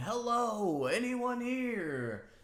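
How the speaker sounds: yelling out. Narrating the scene, voice a character calling into the silent building, yelling out. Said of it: "as Io's yelling".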